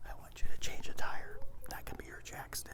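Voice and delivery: whispered delivery. Whispering to a volunteer the action he must act out: whispering. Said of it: "I'm gonna whisper to Jeff what the action is".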